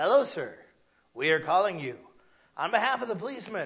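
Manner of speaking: put-on, machine-like automated phone voice. Retelling a police fundraising phone call, imitating the robotic caller voice. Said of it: "he talked like this".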